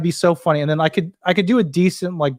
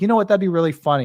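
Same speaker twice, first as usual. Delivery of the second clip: ordinary talk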